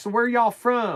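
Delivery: put-on Hoosier accent. Retelling what a local guy asked them in Park County, imitating a country boy accent. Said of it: "it's like super country boy".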